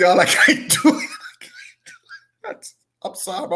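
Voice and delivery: very high-pitched speech breaking into laughter. Trying to talk through a fit of laughter, laughing while talking. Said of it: "I'm glad I'm laughing about it".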